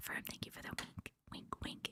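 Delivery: hushed, barely voiced, very quiet whisper. Thanking people one by one for their gifts, the speaker is whispering. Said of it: "Why am I whispering?".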